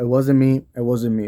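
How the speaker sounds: ordinary talk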